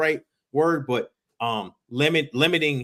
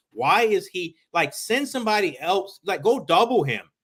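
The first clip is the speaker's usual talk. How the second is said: mock exasperated, fed-up griping yell; 4 semitones higher than usual. Recalling watching a tense game with friends, retelling yelling at the TV. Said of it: "I was yelling at the TV like".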